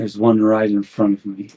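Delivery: low, mumbled mutter under breath. Game master voices a general muttering at the player's character, muttered under breath. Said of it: "you hear him mutter under his breath".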